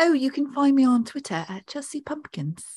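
put-on English accent. Asked to do their impression of an English accent, English accent impression. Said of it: "Do your impression of an English accent".

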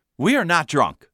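plain

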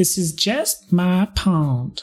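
put-on slow, high Southern accent. Voicing a fae in a role-play scene, the player slips into a Southern accent. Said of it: "Slipping into Southern".

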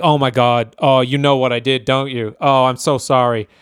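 mock guilty, apologetic tone. Retelling a movie scene where a character suddenly gets very guilty: imitating a guilty confession. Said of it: "just gets very guilty".

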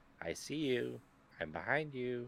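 put-on eerie little girl voice, high and soft. Describing players who scare others in game chat: imitating a creepy little girl voice. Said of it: "that little creepy girl voice".

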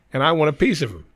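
usual speaking voice

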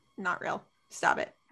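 very quiet, breathy, barely audible whisper. Retelling what was said to the computer while watching: imitating own whisper. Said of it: "whispering to the computer and I'm like".

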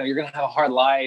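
plain

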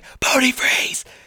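whispered shout, forced out hard on the breath. Retelling trying to get a son's attention: imitating a whisper yell. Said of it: "So whispering, yelling just don't work".

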